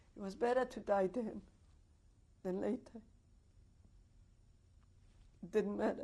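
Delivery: sobbing. Recalling facing death and thinking only of their mother, sobbing.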